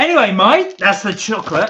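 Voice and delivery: put-on Australian accent, high-pitched and loud. Showing snacks to mike, the speaker talks in an aussie accent. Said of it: "I've got to stop doing the Aussie accent".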